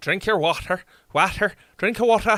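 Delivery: northern English accent slipping into exaggerated put-on Irish. Attempting a northern english accent, a northern english accent gone irish. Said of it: "I got really Irish. I went too far north".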